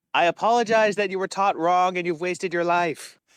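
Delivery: nasty mocking jeer. A player casting vicious mockery, yelling at him with a mocking yell. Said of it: "I yell at him in vicious mockery".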